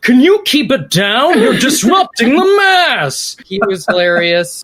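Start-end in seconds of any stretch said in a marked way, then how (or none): 0.0-3.4 high, slow, indignant shushing shout. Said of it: "the guy at church that was like".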